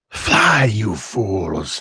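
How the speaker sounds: voice of a strange jungle beast. Voicing the creature before it vanishes: voicing the jungle creature. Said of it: "this creature that stands before you says".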